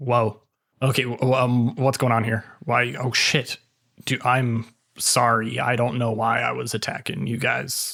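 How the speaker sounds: frightened, dazed-sounding voice. Voicing a freed, still afraid character snapping out: confused and frightened NPC voice. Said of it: "he kinda snaps out and goes".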